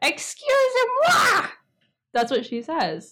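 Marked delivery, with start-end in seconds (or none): 0.0-1.5 diva puppet voice, much higher. Going through a list of voices to imitate, doing a Miss Piggy voice. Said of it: "we've got Miss Piggy".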